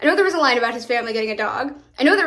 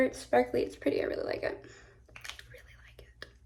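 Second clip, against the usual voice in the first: very quiet, soft, breathy whisper; 14 dB quieter than usual. Showing a sparkly lip gloss and saying it is liked: whispering. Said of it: "I don't know why I'm whispering when I like things".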